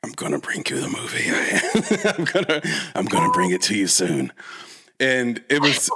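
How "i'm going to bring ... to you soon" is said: deliberately lowered put-on voice. Retelling how they made a job fun, speaking in a lowered voice. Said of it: "people would lower their voice to match".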